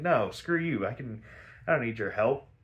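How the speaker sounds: usual speaking voice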